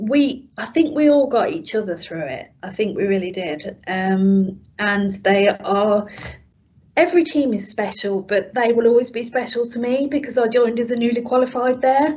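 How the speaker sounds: getting a bit teary and emotional. Recalling how the team got each other through it, getting a bit emotional. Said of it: "sorry, I'm getting a bit emotional now".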